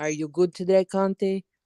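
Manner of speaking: put-on Italian accent. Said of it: "If you do it with an Italian accent".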